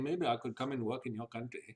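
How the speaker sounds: put-on Delhi English accent. Acting out a phone call with a doctor in Delhi: imitating a Delhi doctor's accent. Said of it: "he's talking like this one to you".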